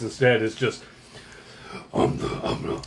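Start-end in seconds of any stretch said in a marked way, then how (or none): 1.9-2.8 whispered, masked-vigilante voice.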